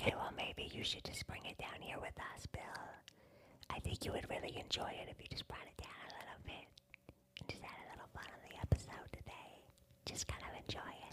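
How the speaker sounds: hushed whisper. Answering a loud cohost during a skit, whispering. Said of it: "And you guys over here whispering?".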